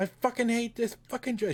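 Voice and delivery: mock very high, shrill, fed-up screaming rant. Describing a woman at her customer service job: imitating someone screaming. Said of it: "She's just screaming in the background".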